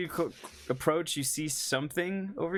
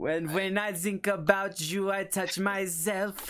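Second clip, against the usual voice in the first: put-on German accent, much higher pitch; 4 semitones higher than usual. Playing a character, the speaker slips into a German accent. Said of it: "slowly devolving into like a German accent".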